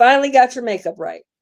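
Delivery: mock sarcastic tone. Retelling what a father said on seeing the speaker: imitating father's sarcastic tone. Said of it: "That is so sarcastic".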